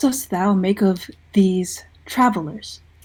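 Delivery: leaning in, hushed whisper. Player in character leaning over to the first mate, whispering. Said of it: "lean over and whisper to her".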